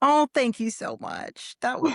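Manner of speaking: on the verge of crying, voice swooping. Guest [name], just welcomed onto the podcast, thanking the host, on the verge of tears. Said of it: "I'm going to cry. Don't make me cry".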